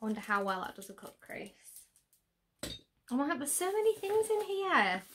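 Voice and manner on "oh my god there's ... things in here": high, gushing, very happy excitement. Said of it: "Can you tell?".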